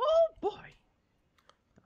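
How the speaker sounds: pitched way up and loud. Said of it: "it reminds me of Mickey Mouse".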